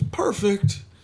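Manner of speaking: high, ringing game-announcer call. Describing a soundboard clip to another speaker: imitating the announcer's "Perfect" call. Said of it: "[name]'s song where he goes".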